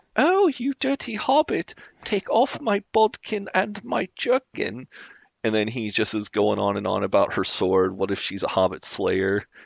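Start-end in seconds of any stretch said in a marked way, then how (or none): 0.2-4.9 very high, sexy put-on elf voice. Retelling a man's role-play monologue as a sexy elf: pitched-up elf voice. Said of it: "he pitches up his voice".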